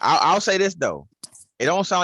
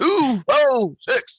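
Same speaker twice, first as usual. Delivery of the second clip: very high pitch, badly off-key; 10 semitones higher, 4 dB louder than usual. Doing a terrible impersonation of Bernie Mac. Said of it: "my terrible impersonation of Bernie Mac".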